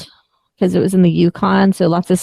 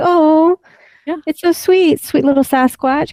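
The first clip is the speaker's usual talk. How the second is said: put-on cooing, higher pitch; 9 semitones higher than usual. Imagining Laura meeting a Sasquatch on her hikes: imitating Laura cooing. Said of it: "being like".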